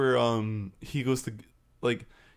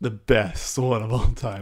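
sarcastic, mock-praising tone; 2 semitones lower, 4 dB louder than usual. Praising a movie while meaning the opposite, sarcastic. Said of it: "as I say with sarcasm".

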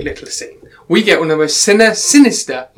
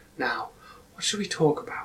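play-acted, very soft, hushed, creepy sadistic menace; 15 dB quieter than usual. Describing a film scene, the speaker quotes Todd's line, creepy and sadistic. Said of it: "He says it in a really creepy, really sadistic".

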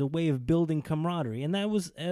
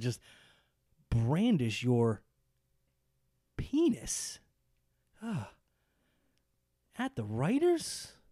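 slow delivery with stress landing on odd words. The speaker acts out a lawyer's question to him, with inflection on the wrong words. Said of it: "there's going to be inflection on the wrong words".

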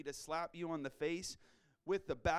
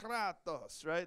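put-on Greek-Italian accent. Speaking to listeners, showing how to pronounce a word in a Nacho Libre accent. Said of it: "That was maybe a little Greek and Italian, like a Nacho Libre accent".

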